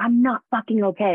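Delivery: put-on hollered outburst. Recounting a conversation with him, the speaker re-enacts their own yell. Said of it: "I yell".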